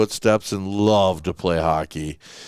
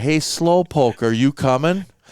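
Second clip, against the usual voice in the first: high, called-out mock kid voice; 5 semitones higher than usual. Retelling how a kid called to his brother: imitating a kid yelling. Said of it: "this kid yells to his brother".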